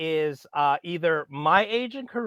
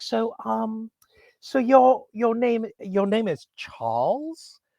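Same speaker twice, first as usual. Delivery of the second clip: odd, high, slow, drawn-out weird tone; 6 semitones higher than usual. Retelling an english housemate asking the speaker's name, imitating her weird tone. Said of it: "that weird tone of voice".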